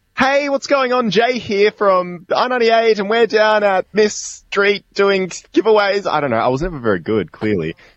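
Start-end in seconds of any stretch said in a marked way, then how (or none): 0.2-6.2 put-on radio promo voice, much higher, louder, slower. Showing how a radio host sounds doing a promo: radio promo voice, octaves higher. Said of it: "increase your voice a couple octaves".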